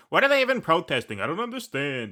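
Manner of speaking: put-on Long Island accent. Imitating a Suffolk County woman who came in by train for cupcakes, put-on Long Island accent. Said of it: "That's my impression of a Suffolk County woman".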